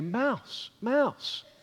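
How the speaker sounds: put-on soft toddler voice with rising pitch.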